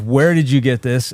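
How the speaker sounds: usual speaking voice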